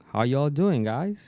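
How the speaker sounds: exaggerated American accent. Showing how one tries to speak English around friends: put-on American accent. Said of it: "more accent, like".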